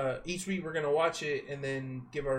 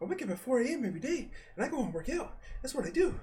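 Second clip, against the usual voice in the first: very high, squeaked-up celebrity voice; 10 semitones higher, 4 dB quieter than usual. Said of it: "that's my [name]".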